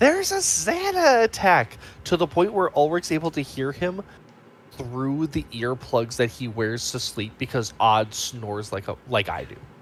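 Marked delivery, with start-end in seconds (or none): 0.0-1.8 play-acted, very high, swooping alarm scream, one word stretched. Retelling a character screaming an alarm: retelling a scream. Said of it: "literally screaming at the top of his lungs".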